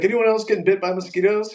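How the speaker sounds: mock grumpy sarcasm. Quoting an annoyed commentator's remarks, mock-sarcastic retelling. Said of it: "he's just being super sarcastic".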